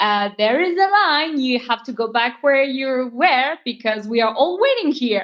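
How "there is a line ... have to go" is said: usual speaking voice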